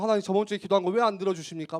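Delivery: fast, whiny, pleading tantrum tone. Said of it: "막 앙탈 부렸다가".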